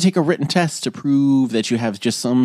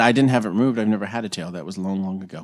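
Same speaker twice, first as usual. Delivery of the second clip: usual speaking voice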